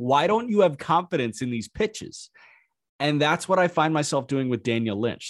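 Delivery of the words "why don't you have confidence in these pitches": yelling in a higher pitch. Retelling watching a pitcher on TV, imitating own yelling. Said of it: "I was just yelling at the T V".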